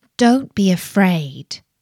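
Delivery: said gently. The stargazer replies to a princess who mocked him: gently. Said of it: "replied the Stargazer gently".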